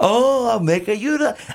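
high, weird, hammed-up fake Italian accent. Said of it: "have such a weird accent thing going on".

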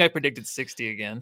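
ordinary delivery

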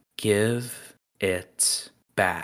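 very slow, drawn-out delivery.

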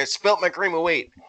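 ordinary delivery

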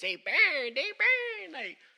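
very high, very loud, shrill, swooping evil witch voice. Telling a story, quoting what a guy said to him, in an evil witch voice. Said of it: "they burn like with an evil witch voice".

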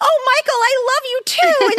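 put-on high, loud gushing thirteen-year-old girl voice.

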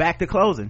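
ordinary delivery

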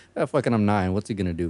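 usual speaking voice

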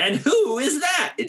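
very high, slow, anxious, nervous voice. Speaker voices their character Norman: Norman voice, high anxiety. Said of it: "he's got like high anxiety".

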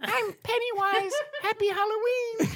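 really high-pitched, tiny little voice. Retelling what a scary clown said, in a high-pitched, tiny voice. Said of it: "said in a really high-pitched, tiny voice".

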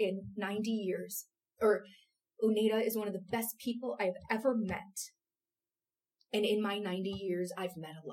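voice catching, choked up, on the edge of crying. Quoting a ninety-year-old man's praise of Uneda, voice choking up. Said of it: "I'm going to cry".

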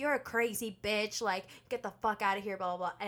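usual speaking voice

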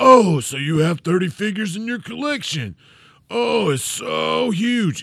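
put-on sarcastic tone. Reading aloud a listener review that mocks the hosts: imitating sarcastic tone. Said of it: "Insert sarcasm like you didn't know I was being sarcastic".

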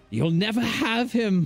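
very high, shrill villain-like shriek. Narrator voicing a woman's last words, screaming. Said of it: "as she screams out".

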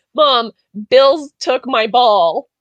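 mock screaming. Retelling running to mom as a child, imitating own screaming. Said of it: "I ran to my mom screaming like".

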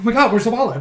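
giddy, high, loud overexcited blurt. Acting out waiting for the pizza delivery: imitating someone too excited. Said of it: "you get a little too excited".

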